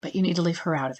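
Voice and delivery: firm but gentle, with a little softness. Demonstrating for the listener how to phrase it: firm with a little softness. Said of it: "and then it got firm, with a little softness in it".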